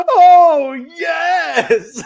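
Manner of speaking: jeering, very high, loud, drawn-out "oh yes". Retelling how Russo taunted a bleeding wrestler: imitating Russo's mocking "oh yes". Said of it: "mocking him with an".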